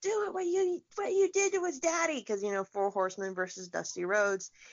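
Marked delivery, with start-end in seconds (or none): 0.0-2.2 play-acted very high, shrill yelling. Retelling one wrestler yelling at another during a match: imitating someone yelling. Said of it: "he starts yelling at Arn".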